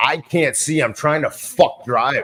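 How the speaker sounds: mock very slow, drawn-out, fed-up angry outburst. Retelling how Tobey Maguire flipped out at flash bulbs: imitating him flipping out. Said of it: "flips out on him".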